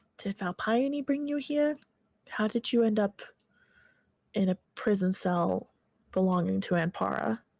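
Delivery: whispered, in character. Voicing a character leaning close through a wall crack: whispering in character. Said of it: "speak at a whisper that only Astera can hear".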